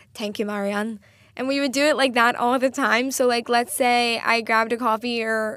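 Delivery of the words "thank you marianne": clumsy, butchered, put-on Irish accent. Retelling a catchphrase from an Irish show: bad Irish accent. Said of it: "I'm not good at accents".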